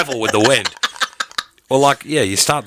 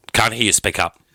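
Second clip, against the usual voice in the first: plain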